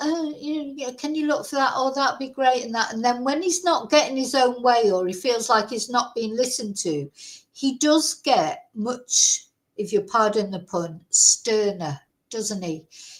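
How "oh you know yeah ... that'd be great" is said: mocking, babyish, whiny voice. Mocking how he talks when things go his way: imitating a whiny man-child voice. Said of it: "you get the whiny".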